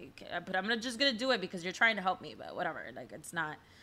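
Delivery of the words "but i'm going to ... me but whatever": grudging, reluctant, unwilling tone. Echoing how the other speaker sounds about the sessions: imitating a reluctant tone. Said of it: "it's the tone that you're, you're, you're giving me".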